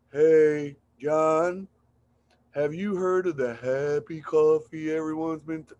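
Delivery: sleepy, sedated, lifeless delivery, low, flat and unexcited. Demonstrating a call to friends about happy coffee, flat, unexcited, sedated-sounding. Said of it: "You sound like you're on Valiums, not on happy coffee".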